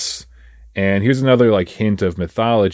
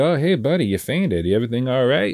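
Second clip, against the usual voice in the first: mock breezy, offhand, friendly, pitched-up nonchalant tone; 5 semitones higher than usual. Retelling how a man greets someone who just fainted: imitating nonchalant talk. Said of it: "he's talking to him very, like, nonchalant".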